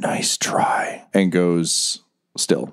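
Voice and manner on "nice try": faint, breathy dying whisper, close to the ear. Narrating a game scene, the speaker voices a dying man's whisper to the player. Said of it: "he just whispers in your ear".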